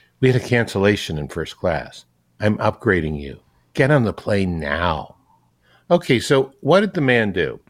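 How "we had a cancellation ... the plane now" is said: imitated whisper. Retelling what a flight attendant says to a passenger: imitating a whisper. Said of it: "almost in a mi-, whisper".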